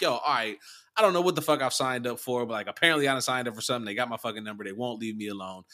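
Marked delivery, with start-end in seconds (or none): none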